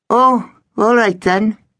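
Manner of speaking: very high, small squeaky voice. A pirate at the back answers the captain: squeaky reply. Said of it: "squeaked a pirate at the back".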